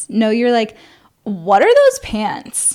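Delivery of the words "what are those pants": mock disapproving, judgmental tone. Imitating how the other speaker asks about someone's pants: imitating a disapproving question. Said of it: "almost like a "what the fuck are you wearing" kind of thing".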